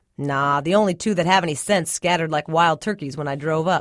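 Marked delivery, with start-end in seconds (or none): none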